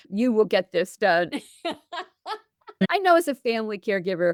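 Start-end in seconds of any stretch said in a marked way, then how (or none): 0.1-1.3 put-on drill sergeant voice. A parent recalls talking to two sons in a drill sergeant voice. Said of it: "so I put on my drill sergeant voice".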